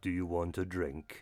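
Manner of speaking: very low, hushed, empty and hollow voice. Game narrator voicing a guy offering a drink, in a hollow voice. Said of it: "He just says in a hollow voice".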